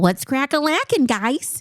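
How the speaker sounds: high dorky nerd voice. Showing how they say an old slang phrase, with a 90s nerd inflection. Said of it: "I use a 90s like nerd inflection in".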